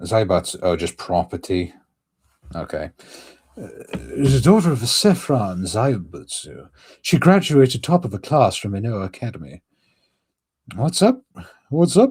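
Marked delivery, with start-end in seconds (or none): 10.7-12.1 English accent, very high and loud. Reading a character description aloud, the speaker breaks into an English accent. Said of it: "I'm doing too many English accents".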